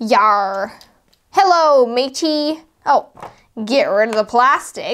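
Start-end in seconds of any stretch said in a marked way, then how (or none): 0.0-2.6 put-on pirate voice. Speaker assembling a toy pirate gives it a voice: pirate voice. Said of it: "He's a super cool pirate".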